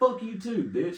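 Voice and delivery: very high, loud, shouted voice. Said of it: "he started yelling at me".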